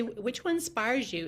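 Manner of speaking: ordinary talk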